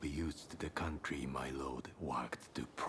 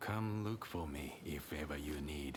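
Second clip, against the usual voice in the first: ordinary talk, nothing marked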